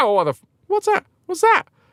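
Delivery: put-on squeaky posh young voice. Retelling feeling a pinch after school as a kid, in a squeaky posh young voice. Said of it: "Young [name] with a squeaky voice".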